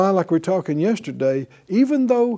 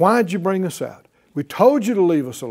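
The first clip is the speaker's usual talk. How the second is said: disrespectful, jeering, scornful, derisive tone. Quoting people speaking to Moses and Aaron, in a mock-derisive tone. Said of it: "speaking disrespectfully and in derision".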